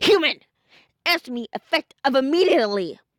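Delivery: commanding, authoritative voice. Reading a story aloud, voicing an angry Papyrus: commanding voice. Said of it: "he said with a commanding voice".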